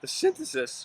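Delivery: voice cracking, breathy, breaking into a whisper. Lecturing on Thiel and Machiavelli, voice cracking. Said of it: "my voice just cracked there".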